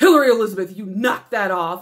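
loud, booming, stern voice. Retelling how the speaker's dad called out across the whole venue, loud booming voice. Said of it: "this loud booming voice".

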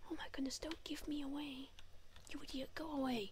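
hushed whisper. A streamer hiding in a game urges another player to go away, whispering. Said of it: "I don't know why I'm whispering".

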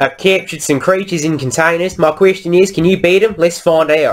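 put-on high, poor American accent. Speaking as the yard's owner character: bad American accent as Mardell Hale. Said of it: "I'm going to keep doing this voice".

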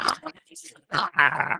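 high, snarling vampire cries. Voicing a vampire snarling while being healed: snarling. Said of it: "he snarls at you".

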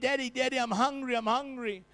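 put-on pleading voice. Retelling a time without food at home: imitating a hungry son pleading. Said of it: "my sons would come to me".

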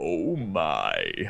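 "oh my" with the "my" stretched long. Performing the phrase when another speaker asks: drawn out "Oh my". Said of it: "Do a drawn out "Oh my."".

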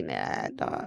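low dismissive brush-off.

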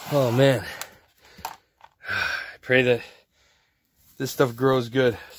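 a little winded, slightly out of breath. Sifting heavy soil while talking to viewers: slightly out of breath. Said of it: "I'm out of breath a little bit".

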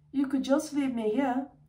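hopeful, eager tone. He puts in a suggestion to his aunt, hopeful. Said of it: "Harry put in hopefully".

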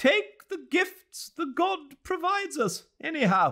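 very high, shrill, shrieking screech. Narrator reads one of two ladies speaking to the other, screeching. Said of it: "she screeched".

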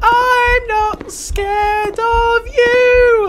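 very high, squeaky little cat voice. Speaking in a cat voice to feel less scared: cat voice. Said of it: "I'm speaking in a cat voice".

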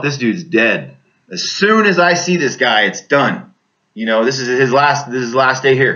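usual speaking voice

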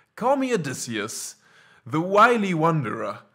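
smooth, charming voice. A narrator voicing a wanderer's introduction in a story, dripping with charm. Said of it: "his voice dripping with charm".

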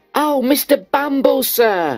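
crying out, very high-pitched and slow. Narrator reads a character addressing a man as sir, crying out. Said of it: "cried Noah".

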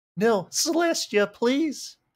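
pleading voice, cracking and breaking very high. Reading aloud a plea to celestia in a story: voice cracking plea. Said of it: "Voice crack".

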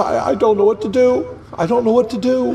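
tearful voice, words coming through crying. Pleading beside a dying friend who can't be saved: crying while talking. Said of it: "I'm crying tears".

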